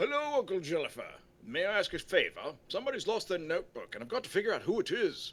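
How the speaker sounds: put-on stupid voice, high, loud and sing-song. Voicing a game character while someone else plays, in a stupid character voice. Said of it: "I'm doing stupid voices. So here's one right now".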